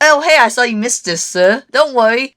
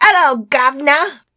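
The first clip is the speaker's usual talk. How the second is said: fake, put-on British Cockney accent; 6 semitones higher than usual. Urging someone into their British voice, greet them in a put-on British Cockney accent. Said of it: "Get into your British voice".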